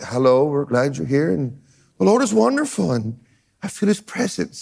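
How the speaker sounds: mild, soft-spoken, hushed murmur. Mocking how the quiet preachers greet people: imitating people talking softly. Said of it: "They talk softly and sweat. / They all talk like".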